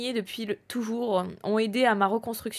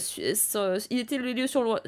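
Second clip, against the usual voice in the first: slow, tired, stumbling over garbled half-words. Recounting the case while annoyed and tired: stumbling over words. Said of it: "donc je bafouille".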